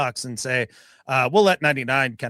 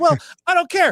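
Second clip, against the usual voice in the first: put-on taunting voice, higher and louder; 6 dB louder than usual. Retelling a play as a pass rusher toying with the quarterback: imitating Leo taunting. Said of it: "And Leo says".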